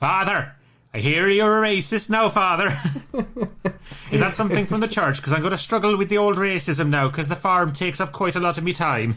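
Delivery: mock loud shouting voice. Retelling a Father Ted scene as the neighbour: imitating the shouting neighbour from Father Ted. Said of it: "and he shouts".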